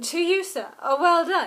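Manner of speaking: very loud, slow sarcastic tone. Retelling a movie moment where a character tips his glasses: imitating sarcastic Woody Harrelson. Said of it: "Woody Harrelson doing his best sarcastic little thing".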